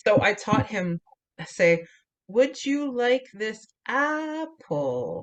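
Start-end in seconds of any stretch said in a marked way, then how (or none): 2.3-5.2 sing-song tune swooping up and down on apple. Showing how the speaker taught a student to ask a question, with rising and falling intonation. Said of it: "it goes up and down".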